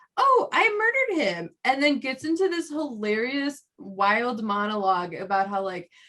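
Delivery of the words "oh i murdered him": tiny, very high little voice.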